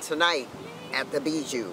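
ordinary talk, nothing marked

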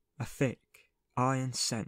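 ordinary delivery

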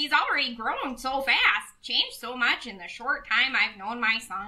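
Minnesotan-sounding speech. Voicing Jasper after someone asks for a Fargo accent. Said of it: "Do a Fargo accent".

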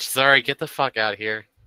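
stage whisper, loud enough to carry. Calling through the window to chizari, in a loud whisper. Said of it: "I just whisper loudly through the window".

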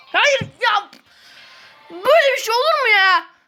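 shrill, very high, very loud frustrated yell. Playing a game while the internet keeps cutting out, frustrated shout. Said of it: "yemin ederim bağırdım".

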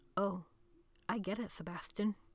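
soft, calm, sorrowful voice. Colin answers sebastian, who shouted right in his face; calm, soft, sad. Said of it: "Colin's voice was calm, soft, sad".

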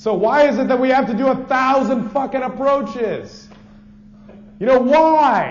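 fired-up, very loud, very high shout, drawn-out "why". Fired up in conversation, yelling. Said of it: "I'm yelling here".

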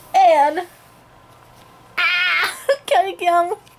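really loud, high excited squeal.

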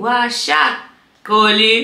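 put-on Italian accent. Reading out what is written on a pair of shoes: Italian accent. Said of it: "with the Italian accent".

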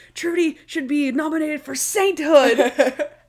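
high-pitched, panicked freak-out. Quoting Stottlemyre's reaction: imitating Stottlemyre freaking out. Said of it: "Stottlemyre freaks out".

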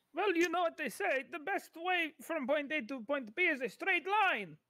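brash, loud, very high bellowing pig-man voice. A player voicing a half-pig character quips to the party, loud half-pig character voice. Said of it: "Literally half pig. I can sniff things. ... He's the loudest one".

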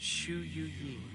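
creepy, eerie, spooky voice. Introduced to a man's daughter, Mr. Yan repeats her name in a creepy voice. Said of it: "it said it in a creepy voice".

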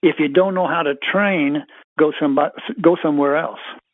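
ordinary talk

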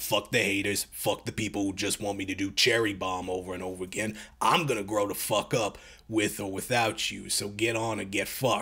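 very deep voice, clumsily done. Imitating Tyler telling the haters off: bad Tyler impression. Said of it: "It's such a bad impression".

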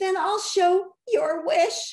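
shaky, quavering, unsteady trembling voice. A narrator reads a character answering a friend's wish, voice shaking. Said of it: "her voice shaking".

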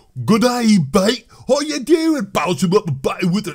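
failed Australian accent drifting Scouse. Quoting the first voice line the game met him with: bad Australian accent. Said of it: "Why am I sound like a scouser from England? I can't do Australia".

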